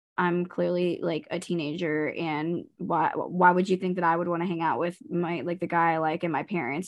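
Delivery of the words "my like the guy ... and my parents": ordinary talk, nothing marked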